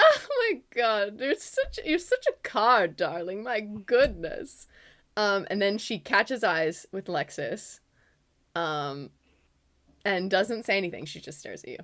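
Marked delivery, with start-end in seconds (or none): 0.0-4.7 words bubbling with laughter, swooping. Game master voicing Galandri's reply to a player's remark, laughing while talking. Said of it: "throwing her head back in laughter".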